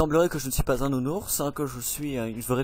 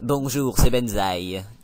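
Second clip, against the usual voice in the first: loud, throat-straining character voice, forced out; 3 semitones lower, 7 dB louder than usual. Greeting a new viewer on stream in Benzaï voice. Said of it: "ça fait mal la gorge comment il fait".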